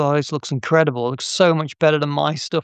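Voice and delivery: ordinary delivery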